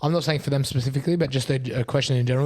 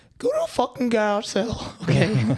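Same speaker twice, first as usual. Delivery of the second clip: brash voice, pitched much higher; 8 semitones higher than usual. Giving final thoughts on education, quoting Gary Vee: Gary Vee impression. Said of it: "Vee was like".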